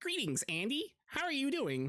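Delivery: put-on very high, swooping, annoying nerdy kid voice. Describing a kid named Kevin, doing Kevin's nerdy kid voice. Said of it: "just sounds like a really like nerdy, nerdy kid".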